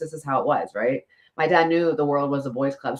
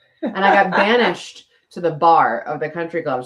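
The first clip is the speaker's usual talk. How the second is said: normal talking voice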